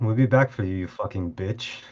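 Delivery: mumbled under breath. A player voicing their character while leaving someone behind, mumbled under breath. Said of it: "Under under my breath, I do mumble".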